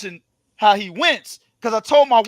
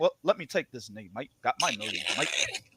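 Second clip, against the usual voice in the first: very quiet, hushed fighter voice, nearly under breath; 11 semitones lower, 16 dB quieter than usual. Retelling what a fighter said after the fight, imitating Jamel's voice. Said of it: "exactly what Jamel said in the same damn voice".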